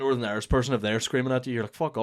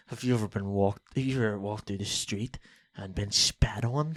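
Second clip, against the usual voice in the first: put-on Northern Irish accent, much quieter; 4 semitones lower than usual. Friends discussing Brad Pitt in The Devil's Own; quiet Brad Pitt Northern Irish accent. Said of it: "Why are you speaking so quiet?".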